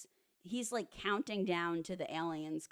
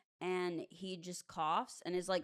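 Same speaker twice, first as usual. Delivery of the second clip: normal talking voice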